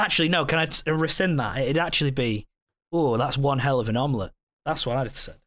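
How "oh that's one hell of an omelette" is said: ordinary delivery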